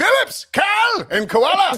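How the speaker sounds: very high, stretched-out, drawn-out shrieking scream. Retelling watching a golf bet win at parents' house, imitating own past screaming. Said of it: "watching that and screaming".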